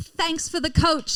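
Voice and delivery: put-on British accent. At a work team-bonding event, the speaker retells thanking coworkers: put-on British accent. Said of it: "is that why I kept hearing a British accent today?".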